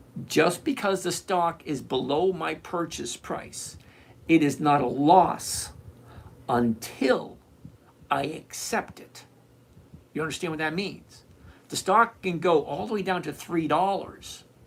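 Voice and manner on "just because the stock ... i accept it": very slow, deliberate, spelled out word by word. Addressing a listener who doesn't get it, saying it really slowly. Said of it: "I'm going to say this really slowly".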